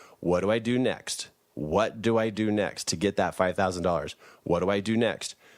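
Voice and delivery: ordinary talk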